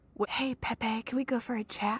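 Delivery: hushed, soft, secretive whisper. Recounting how a woman pulled a man aside for a chat, imitating her whisper. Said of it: "She whispers".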